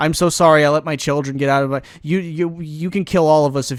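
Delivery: mock pathetic, groveling, pitiful delivery. Retelling how the grandfather apologized: imitating a pathetic groveling apology. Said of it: "just basically being a fucking, like, pathetic piece of shit".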